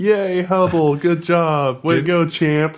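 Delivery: put-on high, bright kid voice. Praising the hubble telescope, in a voice for talking to kids. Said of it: "That's your kid voice".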